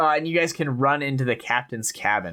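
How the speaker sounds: ordinary talk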